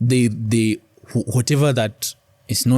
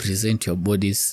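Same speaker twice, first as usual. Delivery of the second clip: ordinary talk, nothing marked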